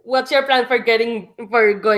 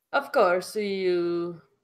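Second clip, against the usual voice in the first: shoddy fake Russian accent, drawn-out "you"; 3 semitones lower, 7 dB quieter than usual. Answering someone who asks about an office to meet at: bad Russian accent. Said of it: "please excuse the really shitty Russian accent".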